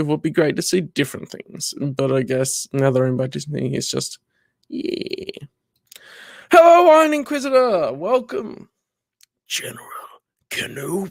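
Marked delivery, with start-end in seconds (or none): 6.5-11.1 very high, sing-song, swooping character voice. Quoting a film scene, a greeting to General Kenobi: movie character voice impression. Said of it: "I don't do the voice exactly right".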